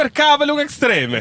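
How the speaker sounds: put-on Italian accent.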